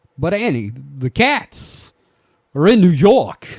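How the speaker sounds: very loud, high, slow, halting, dramatic delivery. Doing a bit with someone set to add a string hit after, give a dramatic slow Christopher Walken read. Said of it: "after I do this voice".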